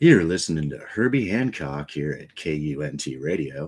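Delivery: smooth, jazz-station radio DJ voice. Speaker shows their DJ voice, announcing tracks: smooth radio DJ voice. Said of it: "the D J voice is this".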